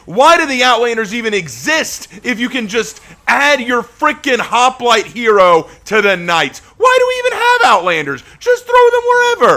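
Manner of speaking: high, loud, angry shouting. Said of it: "do I sound angry about that?".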